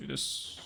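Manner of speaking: quiet mutter. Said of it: "just kinda muttering".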